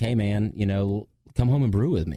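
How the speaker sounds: ordinary talk, nothing marked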